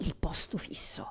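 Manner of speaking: hushed, soft, unvoiced reverent whisper.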